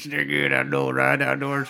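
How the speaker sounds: put-on Southern drawl. Imitating Nolan Ryan doing a meat commercial: Nolan Ryan impression. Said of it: "He went full Deliverance on fucking Nolan Ryan's accent".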